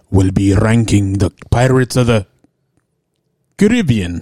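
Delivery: imitated Spanish accent. A podcast co-host announces the episode, attempting a Javier Bardem impression. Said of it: "I was trying to do a Javier Bardem impression".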